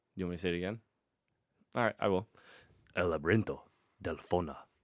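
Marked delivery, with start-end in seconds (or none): 3.0-4.6 deep, low voiceover narrator voice. Asked whether to say the film's original title again, saying it in a deep narrator voice. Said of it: "I like how you went for the same deep voice narrator guy".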